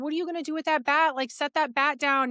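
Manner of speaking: high, frantic, freaked-out panicked scream. Retelling being chased by a man holding a bat: retelling own scream. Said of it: "I'm screaming".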